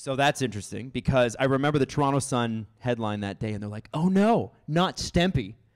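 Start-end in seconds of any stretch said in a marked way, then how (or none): 3.9-5.5 very slow, loud, dripping heavy sarcasm. Retelling a newspaper headline about a traded player: imitating a sarcastic tone. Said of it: "very sarcastic".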